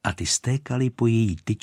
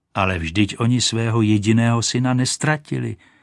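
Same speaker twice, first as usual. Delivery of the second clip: ordinary delivery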